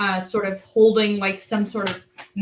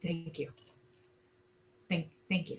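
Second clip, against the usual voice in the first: barely audible, very quiet whisper; 3 semitones lower, 14 dB quieter than usual. Voicing a character hugging another in thanks: whispering.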